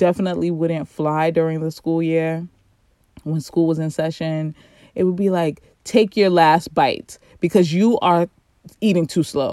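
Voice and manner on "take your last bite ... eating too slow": impatient, irritated scolding tone. Retelling rushing her children at breakfast on school days: imitating her own impatient scolding. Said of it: "you hear the tone".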